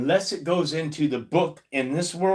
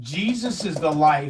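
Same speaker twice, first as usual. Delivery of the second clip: ordinary talk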